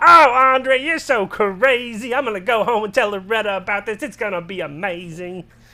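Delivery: high, loud cartoon dad voice. Proving to a doubting guy that he can do the voice, Cleveland from Family Guy voice. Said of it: "I can do Cleveland from Family Guy".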